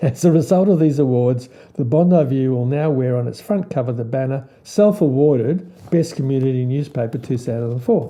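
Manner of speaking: usual speaking voice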